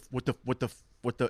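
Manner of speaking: mock-panicked muttering. Speaker describes hearing a rattlesnake while hiking, imitating own panic. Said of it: "That's what I do and panic".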